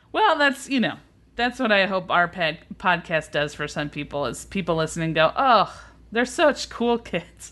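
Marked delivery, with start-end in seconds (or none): 5.3-7.5 slow speech with laughter running through words. Podcast host imagining what listeners say about the show, laughing while speaking. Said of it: "I can't even say it without laughing".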